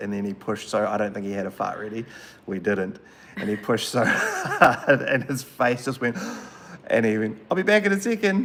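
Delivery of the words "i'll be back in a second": put-on very high, cute, loud voice of a four-year-old. Retelling what a little boy said after pushing too hard, in his cute four-year-old voice. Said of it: "like in his cute little 4-year-old voice".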